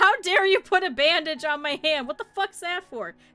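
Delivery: loud, high, angry put-on shouting. Voicing an aggressive patient: acted-out yelling. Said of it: "he was just yelling at Strong Beef".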